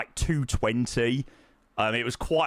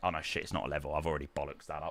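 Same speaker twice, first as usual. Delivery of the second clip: plain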